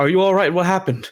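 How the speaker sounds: high-pitched yell. In a tabletop game, a player's character shaking a companion awake yells to another character. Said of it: "I like yell to him".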